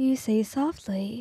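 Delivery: ordinary delivery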